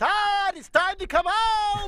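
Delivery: piercing, very high-pitched, long, drawn-out yell. Retelling how a friend's mother called her son home: imitating a high-pitched yell. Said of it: "she had the most high-pitched voice".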